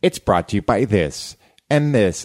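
authoritative pitch fall on "this" and final "this". Demonstrating a standard radio sponsor line: pitch falls on final words. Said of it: "I go down at the end to make it seem like I have authority".

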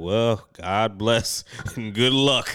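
put-on deadpan delivery. Mocking how listeners sound when they say it, imitating a super-dry tone. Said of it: "that's how you sound".

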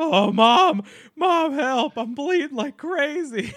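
shrill, very high, very loud, panicked cry. Retelling bleeding badly and calling to mom for help: acting out freaking out. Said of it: "freaking out because I was like".

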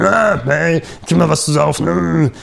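loud, rough, raspy grumbling voice. Describing how the robot sounds: imitating Bender, grumpy fan. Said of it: "eher wie so ein laut äh, mauliger Fußball oder respektive Baseball, Fan".

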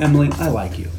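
ordinary delivery

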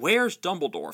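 insistent, demanding tone. The Minister questions Mrs. Weasley in the hospital wing, demanding. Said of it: "Fudge demanded".

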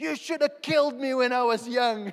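high, very loud, full-throated yell. The speaker retells arriving and starting to shout, retelling own shouting. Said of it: "So I start shouting".

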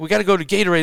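shouting. Retelling what someone yelled out during a game: imitating someone yelling. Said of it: "he yells out".

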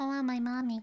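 voice imitating the way an owl sounds. Reading a picture book aloud, saying the baby owl's line: Bill's voice. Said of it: "that's how he says it".

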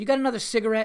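abrupt, rude voice. Retelling a stranger asking for a cigarette: imitating an abrupt, energetic demand. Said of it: "very abruptly, with a lot of energy and no fucking manners at all".

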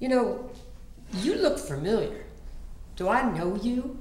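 put-on Oklahoma accent. A comedian retells what a man said on meeting, in his Oklahoma drawl. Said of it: "in his Oklahoma drawl".

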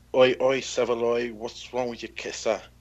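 slow, drawn-out Cockney accent. Repeating a Cockney phrase in a TV character's accent: Phil Mitchell impression. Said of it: "Phil Mitchell".

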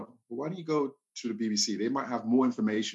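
ordinary talk, nothing marked

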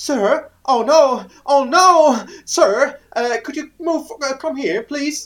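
bright, high, loud, drawn-out call in English. Retelling a ranger calling to him in English while he was peeing, imitating a high voice. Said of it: "so eine helle Stimme auf Englisch".

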